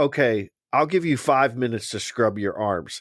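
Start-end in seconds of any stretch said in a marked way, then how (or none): none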